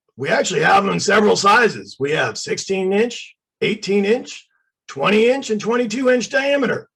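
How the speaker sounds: gruff shopkeeper voice. Speaker quotes the man who answered, retelling a gruff voice. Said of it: "this gruff voice goes".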